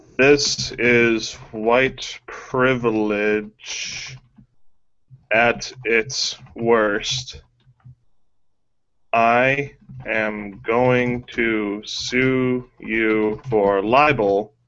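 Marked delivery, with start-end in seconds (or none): none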